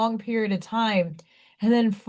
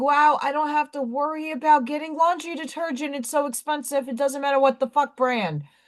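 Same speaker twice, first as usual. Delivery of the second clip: mock tearful voice, higher pitch; 4 semitones higher than usual. Retelling a remark at the store: imitating own tearful words. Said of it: "just teared up going".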